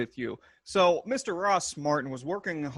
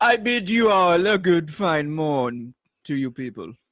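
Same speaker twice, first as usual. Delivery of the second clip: loud, haughty, snooty upper-class aristocrat voice; 6 dB louder than usual. Asked by the host to greet the people, the co-host uses a snooty aristocrat voice. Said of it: "I was trying to work on my snooty aristocrat voice".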